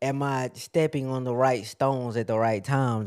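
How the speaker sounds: plain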